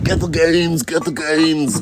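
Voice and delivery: bad put-on Austrian-accented bodybuilder voice. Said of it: "that's a terrible Arnold Schwarzenegger, uh, impersonation".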